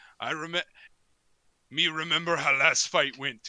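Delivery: big, loud, booming, bellowing orc voice. A storyteller voices the orc in a scene with a barkeep: orc character voice. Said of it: "as the orc kind of goes".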